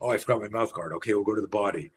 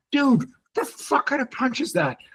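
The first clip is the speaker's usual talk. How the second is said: shrill, very high-pitched yelling; 3 dB louder than usual. Karate coach retelling how he yelled at a beginner's punch, retelling his own yell. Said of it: "I'm like yelling at him".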